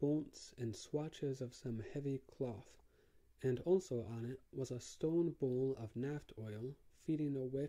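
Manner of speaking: ordinary delivery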